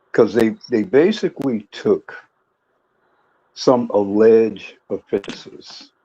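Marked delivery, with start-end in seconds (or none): 3.9-4.7 emphasis on the word alleged. Making an argument to a panel, stress on ALLEGED. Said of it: "I'm emphasizing the word alleged".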